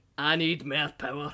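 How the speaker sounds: spoken with a Scottish accent. Asked for a good Virgil accent, Dad does a Scottish Virgil voice. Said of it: "Fucking Scottish Virgil".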